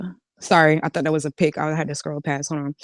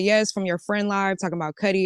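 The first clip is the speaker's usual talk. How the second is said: normal talking voice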